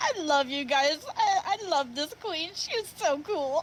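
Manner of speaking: talking while laughing through the words. Voicing a character who is grinning and laughing: laughing while talking. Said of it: "wide smile, laughing".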